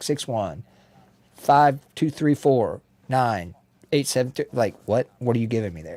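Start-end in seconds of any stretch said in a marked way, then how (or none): 0.0-4.4 slow digits, awkward pauses, wrong rhythm and cadence. Giving a phone number as an example, phone number in odd cadence. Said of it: "giving you a phone number in the wrong cadence".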